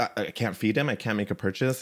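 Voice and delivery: ordinary talk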